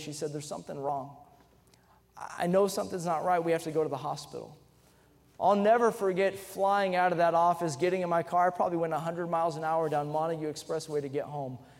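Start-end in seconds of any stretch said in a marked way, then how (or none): 0.3-4.6 mock broken, cracking, breaking voice. Retelling a wife's phone call saying they must go to hospital: imitating wife's broken voice. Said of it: "her broken voice".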